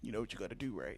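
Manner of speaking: very soft, very quiet, hushed under the breath. Retelling what Doc said before hosting: imitating Doc's voice. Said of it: "do his voice one more time".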